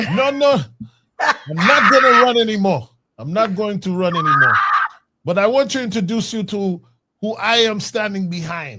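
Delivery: put-on Haitian accent, done spot on. Retelling how a man said he would not run and introduced you, imitating his Haitian accent. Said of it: "I got to do his Haitian accent".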